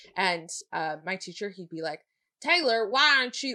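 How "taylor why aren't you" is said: put-on heavy Southern accent, loud and high. Speaker imitating a teacher calling on them in class, in a heavy southern accent. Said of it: "He had a really s- heavy Southern accent too".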